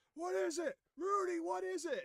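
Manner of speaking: mock frantic shrieking, very high and panicked. A narrator voices a character hobbling toward the group, screaming.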